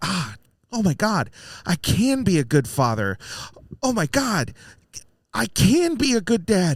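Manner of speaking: acted joyful little burst of high, swooping excitement. Describing a man in Neverland, acting out his excited realization. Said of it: "he gets that little excitement of like".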